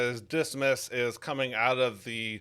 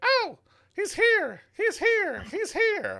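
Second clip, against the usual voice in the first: very high, swooping, mischievous imp voice; 4 dB louder than usual. Narrator voicing an impish figure alerting the party; impish voice. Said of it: "impish voice".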